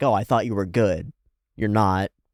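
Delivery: put-on mocking tone. Retelling a fighter apologizing to a knocked-out opponent: imitating a mocking tone. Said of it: "a little bit of mockery in that".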